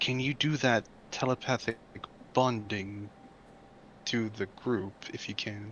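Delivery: hushed whisper, very quiet, barely audible. Whispering a request to another party member during a tense encounter: whispering. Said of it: "I'm gonna whisper to Vash and say".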